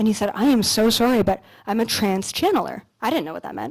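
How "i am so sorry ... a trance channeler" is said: put-on breathless speech, lower. Retelling what a stranger said after sitting down: imitating someone out of breath. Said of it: "he was, like, out of breath".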